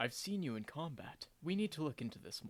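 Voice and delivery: whispering. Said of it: "Normir whispers to Sylvie and says".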